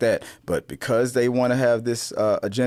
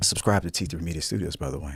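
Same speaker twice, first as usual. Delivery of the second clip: low, sultry, put-on seductive voice; 5 semitones lower, 5 dB quieter than usual. Plugging the channel mid-conversation as a joke: put-on sexy voice. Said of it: "I'm gonna use my sexy voice".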